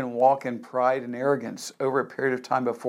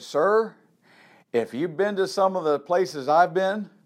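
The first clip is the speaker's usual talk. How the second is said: put-on heavy, very strong Southern American accent; 5 semitones higher than usual. Retelling a man's answer to a question about praying at meals; very southern accent. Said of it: "in this very southern accent".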